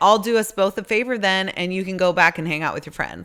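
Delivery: normal talking voice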